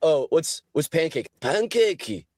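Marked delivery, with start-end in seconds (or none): 1.4-2.2 put-on Japanese accent, pitched up. Describing japanese lessons, saying an english word in a stereotypical japanese accent. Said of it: "English word in like a like a stereotypical uh, Japanese accent".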